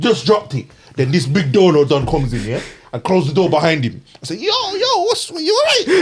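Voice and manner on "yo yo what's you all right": voice breaking way up high. Speaker retelling greeting a man who came in, with a put-on voice crack. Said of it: "That's why my voice cracked".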